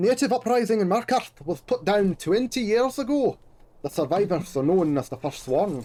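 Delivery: put-on, attempted Scottish accent. Reading a passage aloud from a game, attempted Scottish accent. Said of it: "I don't know if that was a good Scottish accent. It was an attempt".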